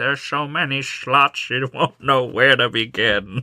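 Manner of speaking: put-on slow old lady voice.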